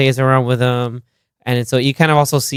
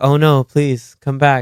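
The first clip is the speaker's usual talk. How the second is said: put-on mock-pleading voice. Retelling a film scene where a character does the Willy Wonka: Willy Wonka impression. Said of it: "Sydney does the Willy Wonka".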